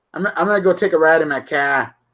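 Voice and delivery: Boston accent, "car" said without the r.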